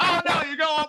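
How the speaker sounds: put-on yelling. Retelling the local crowd shouting directions at a woman, imitating locals yelling directions. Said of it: "the local crowd yelling at her".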